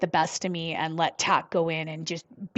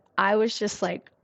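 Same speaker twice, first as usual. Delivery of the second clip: normal talking voice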